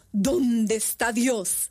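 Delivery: very slow, even graver priest-like tone.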